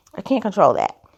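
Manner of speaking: ordinary talk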